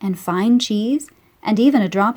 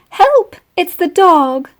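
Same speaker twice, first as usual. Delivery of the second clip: shrill, very high, frightened squeak; 9 semitones higher, 7 dB louder than usual. Narrator reading a story after a dog barks, voicing Melissa's frightened squeak. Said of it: "squeaked Melissa".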